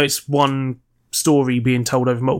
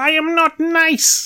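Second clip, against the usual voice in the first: very high, very slow, stretched-out cartoon villain voice. Quoting the kind of thing Skeletor says: Skeletor voice. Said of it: "He says stuff like".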